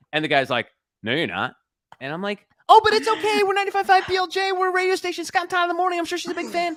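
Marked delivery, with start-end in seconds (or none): 2.7-6.7 very high, loud, scared voice. Retelling trying to get past a security guard, the speaker imitates their own scared high voice. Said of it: "my voice goes up like 10 octaves".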